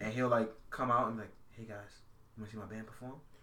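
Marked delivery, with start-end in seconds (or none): 1.5-3.1 put-on sleazy, sly, shady, very soft, hushed, rattled off. Describing his voice acting bit, the speaker imitates him in a shady-sounding voice. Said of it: "You just sound mad shady".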